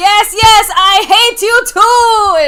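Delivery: very loud, booming, very slow, high, stretched-out voice. Retelling another person's reply: Coming to America voice. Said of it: "in his Coming to America voice".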